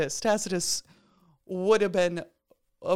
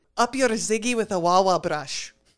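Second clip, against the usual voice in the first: put-on Scottish brogue with rolled r. Asked by co-hosts to repeat a phrase in a perfect Scottish brogue, rolled R. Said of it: "In a perfect Scottish brogue".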